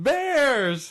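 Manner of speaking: loud yell. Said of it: "yell something".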